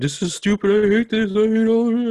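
mock very high, tearful, crying wail. Retelling being dragged through a haunted house: retelling own crying and screaming. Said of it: "crying and s-, like, screaming".

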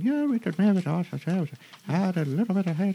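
very high-pitched put-on Irish accent. Voicing characters overheard talking, meant as Scottish: Irish-sounding accent. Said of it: "We've got Irish".

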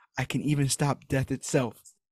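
almost whispered, hushed, under the breath. Retelling a child's words in a story: imitating an almost-whisper. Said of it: "almost whispers".

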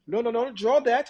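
put-on European accent. Retelling how an art teacher insisted on a drawing, in a put-on European accent. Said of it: "she has European accent".

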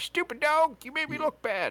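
very high-pitched cartoon character voice. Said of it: "And I did the voice".

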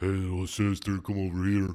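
brute monster voice, calling out. Joking about a game character who never talks: imitating a Big Daddy. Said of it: "you never seen a Big Daddy be like".

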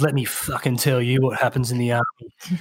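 menacing, threatening, intimidating tone. Retelling what a man said to the speaker about the army; imitating someone trying to scare. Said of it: "this is how he talk".

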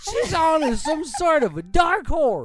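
high, slow, loud put-on announcer voice. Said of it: "You sound like that".

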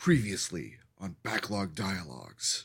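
deep movie trailer announcer voice, big-screen narration. A host opens the show's recap segment; movie trailer announcer voice. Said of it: "I'm going to try to do the movie trailer announcer voice".

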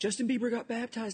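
high, excited, mock gushing voice.

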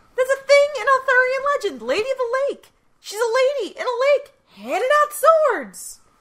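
very high-pitched, very loud, sarcastic tone. Explaining the Lady of the Lake to another speaker: sarcastic tone. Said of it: "you're talking with sarcasm now".

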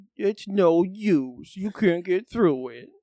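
sagging, droopy cartoon hound voice. Retelling what a guy across the hallway says, in a Droopy dog voice. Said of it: "speaks in a droopy dog voice".

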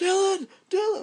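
play-acted shrill high-pitched scream. Retelling how Duke, climbing a crevice, started screaming; imitating Duke screaming. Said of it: "he starts screaming".

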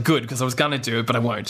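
ordinary talk, nothing marked

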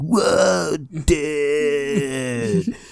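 high cartoon turtle voice. Describing the one character who copies a cartoon voice, in a Michelangelo Ninja Turtle voice. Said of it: "exact like ripoff of like the Michelangelo Ninja Turtle voice".

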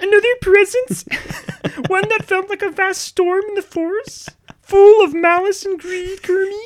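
shrill, high, loud put-on voice. Reading a book passage aloud after being asked: Miss Piggy voice. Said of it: "Do it in Miss Piggy's voice".

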